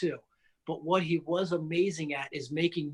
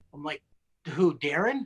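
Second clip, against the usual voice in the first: usual speaking voice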